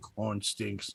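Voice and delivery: mock very hushed, forlorn, sad little-girl voice. Retelling a sad little girl's reaction to a boy, imitating a sad little girl.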